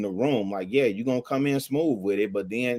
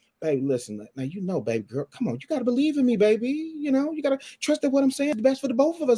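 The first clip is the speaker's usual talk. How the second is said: put-on very high, smooth, swooping sweet-talking voice; 12 semitones higher than usual. Man acting out how he talks before turning aggressive, imitating smooth sweet-talk. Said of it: "You smooth talking it".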